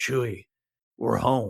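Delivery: film hero line reading in trailer style. Imitating a movie trailer line, Harrison Ford impression. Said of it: "very good Harrison Ford impersonation".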